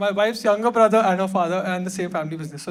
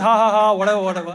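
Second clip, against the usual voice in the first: usual speaking voice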